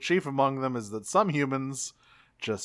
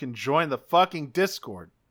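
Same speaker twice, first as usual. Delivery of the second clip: blunt, aggressive, forceful delivery. Podcast host inviting listener questions, aggressive. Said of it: "that came out aggressively".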